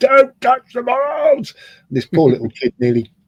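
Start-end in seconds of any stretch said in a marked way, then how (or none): 0.0-1.5 acted, booming, very high, loud policeman bellow. Telling how Colin, in policeman mode, shouted at a little kid, retelling Colin's bellow. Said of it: "he bellowed".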